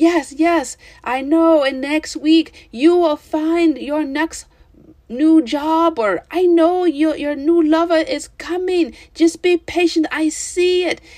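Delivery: very high, slow, drawled put-on Jamaican accent. Retelling a TV psychic's predictions: Miss Cleo fake Jamaican accent. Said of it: "she talked into a, a fake Jamaican accent".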